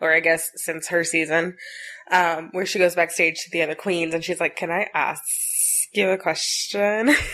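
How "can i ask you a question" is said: bad, slow Valley Girl drawl in a man's voice. Retelling a queen's backstage question to the other queens, in a horrible Valley Girl voice. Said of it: "this horrible Valley Girl voice".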